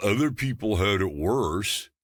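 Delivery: affected put-on voice. Quoting a trap people fall into: affected voice. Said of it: "I say it with that affected voice".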